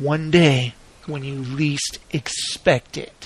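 mock very deep, slow, drawn-out, ominous, menacing voice. Retelling what a man soaked in whipped cream said to her, retelling a menacing threat. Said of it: "That sounded scary, like a threat".

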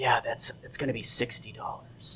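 sly con man voice, leaning in close.

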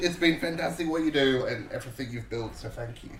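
heartfelt, tearful, choked-up voice near tears. Speaker thanks the organisers for their events and support, tearful thanks. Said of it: "Don't cry".

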